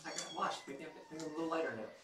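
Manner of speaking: high, sing-song little kitten voice. Voicing a kitten just after its wash: speaking as the kitten. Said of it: "He's like".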